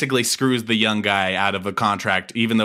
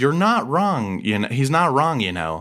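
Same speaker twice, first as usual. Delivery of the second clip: ordinary talk, nothing marked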